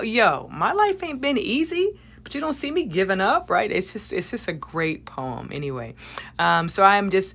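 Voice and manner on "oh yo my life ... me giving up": put-on very high, swooping, sassy old mom voice. Describing a poem, the speaker voices it as an old mom talking to her son. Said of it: "it sounds like an old mom talking to her son".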